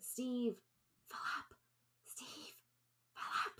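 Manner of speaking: hushed, slow, drawn-out whisper. Walking down a hallway in character, calling two companions' names: whispering. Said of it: "continue walking and start whispering".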